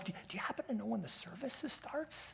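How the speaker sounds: timid, very hushed, very quiet. Retelling a man coming up to ask about the service, the speaker acts out a timid voice. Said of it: "in a very timid voice".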